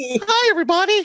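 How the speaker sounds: voice going very high and squeaky. Joking about being a Puerto Rican Mickey Mouse, greet everyone in a Mickey Mouse voice. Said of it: "Just a big old Mickey Mouse ears".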